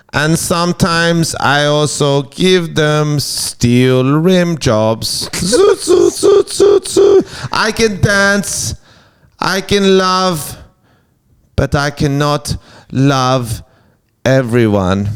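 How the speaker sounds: put-on robot voice with a German accent. Speaker addresses aliens as an intro, in a German robot voice. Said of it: "I am a German robot".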